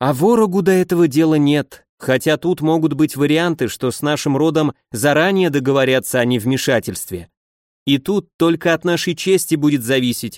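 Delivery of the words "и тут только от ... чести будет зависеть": ordinary delivery, nothing marked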